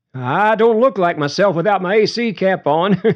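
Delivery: very high, giggly, nervous laugh through words. Narrator reads Forrest answering Leo's request to take off his cap: nervous chuckle. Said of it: "said with a nervous chuckle".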